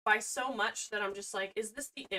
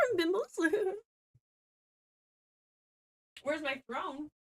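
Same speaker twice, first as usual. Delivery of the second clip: tiny, high-pitched gnome voice; 7 semitones higher than usual. Speaker assembling drawers, playing a little gnome, little gnome voice. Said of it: "I'll just sound like a little gnome".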